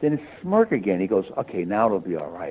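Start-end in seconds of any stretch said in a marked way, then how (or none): 1.4-2.5 put-on whisper, lower pitch. Retelling what a man said to them: imitating someone whispering. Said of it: "He's whispering to me".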